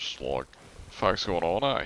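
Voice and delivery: understated, light, casual everyday Australian accent. Speaker demonstrating kinds of Aussie accents, slight normal Aussie accent. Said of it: "slightly putting it into your accent to sound like a normal Aussie".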